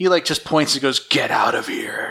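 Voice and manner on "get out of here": put-on low, sinister, menacing tone. Retelling a scene where the brother points at his sister: imitating a sinister threat. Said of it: "way more sinister looking than the show intended".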